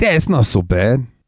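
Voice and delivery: put-on thick New York accent. Retelling a man's reaction after tasting from a toothpick, in a thick New York accent. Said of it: "he's got a real thick fucking New York accent".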